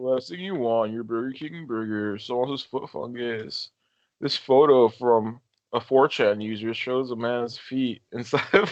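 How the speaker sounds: relaxed, chill, unbothered narration. Attempting an impression of Chills reading a list entry: Chills impression. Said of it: "I can't keep that chill, that chill attitude that he has".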